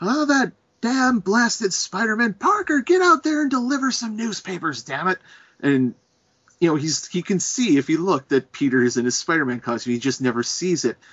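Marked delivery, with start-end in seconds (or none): 0.0-5.2 very high, shrill hollering outburst. Retelling Spider-Man comics, acting out J. Jonah Jameson yelling at Parker. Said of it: "Jonah Jameson is just yelling".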